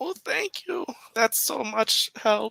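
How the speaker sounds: put-on very high, creaky little old lady voice. Offered a front-row seat, a character thanks the one helping her, little old lady voice. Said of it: "old lady".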